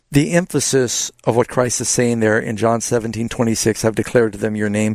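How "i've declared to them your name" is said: plain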